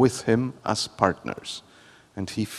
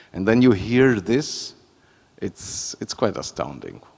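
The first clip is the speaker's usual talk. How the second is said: ordinary talk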